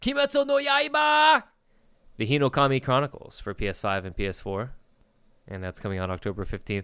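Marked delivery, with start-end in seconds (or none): 0.0-4.7 hyped, high-pitched, swooping anime announcer voice. A host announcing the next game on the list, like an anime announcer. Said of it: "like an actual anime announcer".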